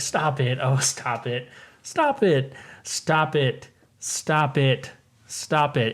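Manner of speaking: put-on playful scolding voice. Retelling a TV scene, imitating Deborah Jo telling her husband to stop it jokingly.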